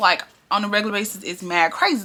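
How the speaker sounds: ordinary delivery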